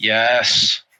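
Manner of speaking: listless, uninterested, bored, low voice. Voicing a sentient axe answering a question: bored-sounding axe voice. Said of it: "you sound bored of this tavern".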